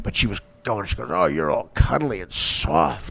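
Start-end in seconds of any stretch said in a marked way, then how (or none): 1.1-3.1 drawn-out, slow, creaky, seductive sexy voice. Retelling what a woman said while trying to be nice, in a mock sexy voice. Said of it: "she was doing it in a sexy voice".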